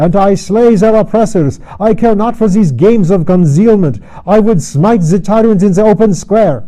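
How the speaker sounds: crying out loud and high, thick with excitement. Reading a novel aloud, the Pole declares he'd smite tyrants: crying out in thick excitement. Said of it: "cried the Pole in thick excitement".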